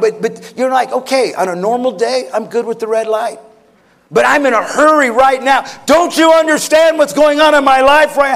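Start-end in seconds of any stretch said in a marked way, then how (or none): 0.9-8.2 rising, louder, higher impatient pleading tone.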